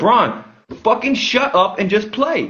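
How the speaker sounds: mock, high, drawn-out screaming. Retelling what was screamed at the tv during a game: retelling screaming at the tv. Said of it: "I was screaming at the T V".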